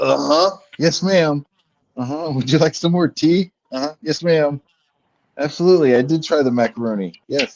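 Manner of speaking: hungover mumble, slightly high pitch. Acting out answering a great aunt the morning after: imitating a hungover person. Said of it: "your eyeballs hurt every time you, like, move 'em".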